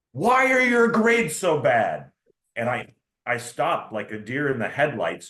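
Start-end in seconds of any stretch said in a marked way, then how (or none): 0.2-2.1 shrill, very high scream at top of lungs. Retelling how an admiral greeted him at the office door: imitating someone screaming. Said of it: "screamed at the top of his lungs".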